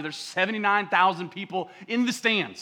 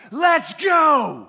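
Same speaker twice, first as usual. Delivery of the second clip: high, loud, rousing shouted yell; 8 semitones higher, 7 dB louder than usual. Retelling how a player yelled to his team: imitating a loud yell. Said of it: "he yells at him again".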